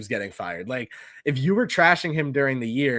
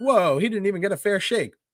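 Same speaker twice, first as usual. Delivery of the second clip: snide, sarcastic mock tone, pitched up; 7 semitones higher than usual. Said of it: "the rest of the media ... is now like".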